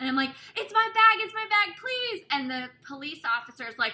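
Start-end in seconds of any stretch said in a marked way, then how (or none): 0.6-2.2 shrill, high, loud, frantic voice. Retelling running up to her bag at the airport gate: mock-frantic pleading. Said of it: "And he was really mad".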